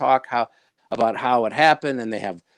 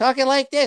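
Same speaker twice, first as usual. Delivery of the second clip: squeaky, chipmunk-like, pitched-up helium voice; 12 semitones higher than usual. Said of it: "It's Alvin and the Chipmunks because they're breathing helium".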